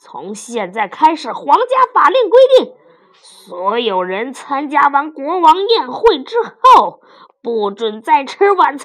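very loud, declaiming shout. Narrator reads the king's line in the story, shouted. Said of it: "国王喊道".

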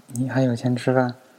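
plain reading voice

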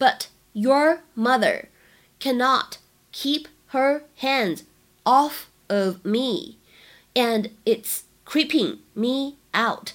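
slow, drawn-out, line-by-line reading.

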